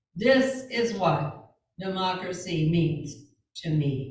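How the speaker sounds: measured, resolute, firm, deliberate, slow delivery. Showing how Mary McLeod Bethune spoke in recordings: imitating Mary McLeod Bethune's firm deliberate delivery. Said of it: "She would talk like this".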